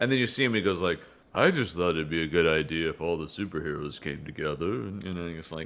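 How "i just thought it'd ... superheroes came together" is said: dull, flat, low voice. Imitating how Jim Shooter sounds in interviews: dull Jim Shooter voice. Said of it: "a fairly kind of dull sort of voice like this".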